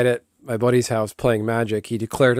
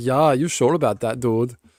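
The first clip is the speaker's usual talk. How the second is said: put-on German accent in a talking dog voice. Voicing the dog in a made-up bit: german accent dog voice. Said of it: "That's perfect with the German accent".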